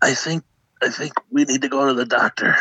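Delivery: faint, lifeless, weak, barely-there near-mumble. Retelling a morning phone call, the speaker quotes him imitating a barely-talking voice. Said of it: "sounds like death he's barely talking".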